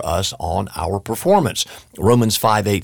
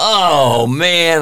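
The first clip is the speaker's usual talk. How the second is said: mock sudden blurted outcry; 6 semitones higher, 5 dB louder than usual. Speaker retells dropping a glass of milk, re-enacting crying out. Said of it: "I just cried out going".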